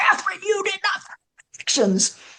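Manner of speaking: put-on very high-pitched screaming. Retelling a nun screaming at a child over coloring: imitating someone screaming. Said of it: "She is screaming at me".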